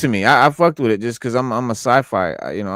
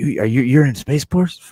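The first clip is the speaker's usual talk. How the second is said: mock eager, excited voice stumbling over its words. Retelling getting pulled over, imitating the cop: imitating an excited cop. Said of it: "the cop was, like, all excited".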